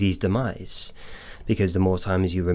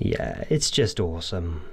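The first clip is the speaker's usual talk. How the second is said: usual speaking voice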